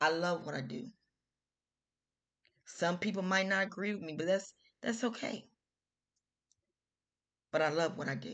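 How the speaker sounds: on the verge of tears. A show host speaking to viewers, about to cry. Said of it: "I'm about to cry now".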